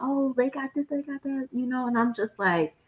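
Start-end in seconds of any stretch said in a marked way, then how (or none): 0.0-1.5 play-acted excited, eager babble, pitched up. Retelling her reaction in line at a halal cart: imitating someone excited. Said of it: "all excited".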